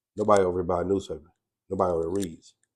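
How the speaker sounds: normal talking voice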